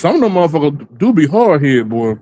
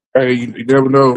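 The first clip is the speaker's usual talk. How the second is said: usual speaking voice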